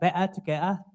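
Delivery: imitated London accent. Learner in london mimics how people there say the phrase: london accent. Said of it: "Or in London accent, it would be like".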